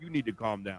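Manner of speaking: firm, emphatic, not super aggressive. Warning a drunk at the bar while in character: firm, not super aggressive. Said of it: "really trying to get the point across".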